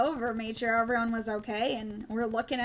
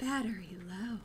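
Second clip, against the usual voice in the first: soft, quiet, hushed, seductive sultry voice; 2 semitones lower, 7 dB quieter than usual. Retelling what the dispatch lady said, in a quiet, hushed voice. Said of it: "this was like a real quiet, hushed voice".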